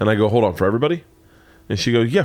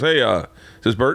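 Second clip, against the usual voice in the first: self-assured, authoritative, commanding, official-sounding voice. Retelling a phone call from a job contact: imitating an authoritative caller. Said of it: "Like, really authoritative, right?".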